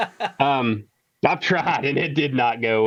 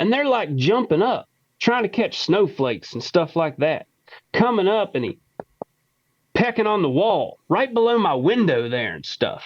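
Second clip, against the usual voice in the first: rural Kentucky accent, pitched higher; 5 semitones higher than usual. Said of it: "you can hear in the accent. This is a country dude from Kentucky".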